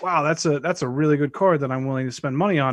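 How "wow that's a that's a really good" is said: plain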